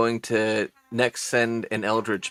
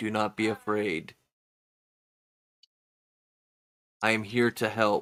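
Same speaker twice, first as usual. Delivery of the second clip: gentle, soft, angelic voice; 5 dB quieter than usual. Game master narrating a voice Krusk hears in his cell, angelic voice. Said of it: "you hear an angelic voice saying".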